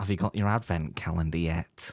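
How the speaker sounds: low, odd put-on tone of voice. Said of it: "That tone of voice was weird".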